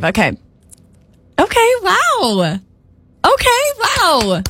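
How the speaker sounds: very high, swooping, encouraging, supportive tone. Turn-taking word game, asked for the supportive version, supportive.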